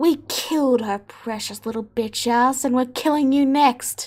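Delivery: sneering, taunting, threatening villain voice. Voicing an enemy leader who leers at Korax: leering villain taunt. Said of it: "the leader leers at Korax and then says".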